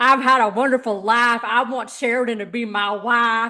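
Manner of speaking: put-on drawling Southern accent. Quoting a man saying he's had a wonderful life: put-on Southern accent. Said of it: "drawing on my southern accent".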